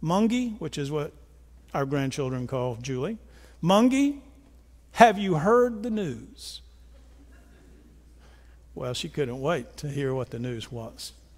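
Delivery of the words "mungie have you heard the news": mock little boy voice, grave and dead serious tone. Retelling what a grandchild said to his grandmother on a drive, very serious tone. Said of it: "he says in the most serious tone".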